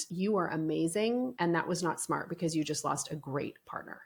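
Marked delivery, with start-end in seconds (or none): none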